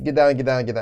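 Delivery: ordinary talk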